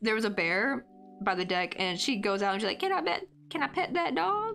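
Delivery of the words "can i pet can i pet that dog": put-on very high, strong, cute little Southern girl accent. Retelling a meme about a girl who sees a bear: imitating a little Southern girl. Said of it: "The cute little Southern girl who was like".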